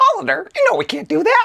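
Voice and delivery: very high, swoopy, cartoon-style voice. Playing a character who turns down a summer invitation; Mickey Mouse voice. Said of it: "I will be [name] as Mickey Mouse".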